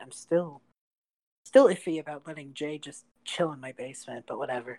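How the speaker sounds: half-sighed, musing aside to himself. Voicing Calem, talking to himself about a guest in his basement: Calem sighing to himself. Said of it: "Calem kind of sighs to himself".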